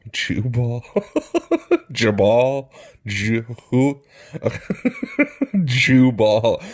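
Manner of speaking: giggling and laughing, swooping, stumbling over words. Reading a Bible passage aloud, laughing while reading. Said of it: "I'm sorry for laughing".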